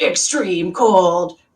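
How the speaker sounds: hyped-up monster truck rally announcer voice. Opening a stream during an extreme cold warning, monster truck voice. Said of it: "in like a monster truck voice".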